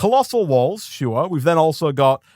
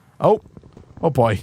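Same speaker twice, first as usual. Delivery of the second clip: plain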